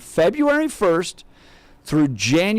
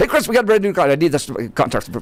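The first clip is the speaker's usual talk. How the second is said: hurried, rapid-fire words tumbling together. Retelling a phone call to an attorney friend: very fast talking. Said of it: "talk to him very, very quickly".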